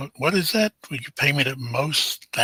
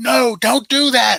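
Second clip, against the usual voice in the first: very high, very slow, shrill, drawn-out loud scream; 10 semitones higher, 5 dB louder than usual. Retelling a sound from open browser tabs: imitating someone screaming. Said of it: "somebody started screaming, like".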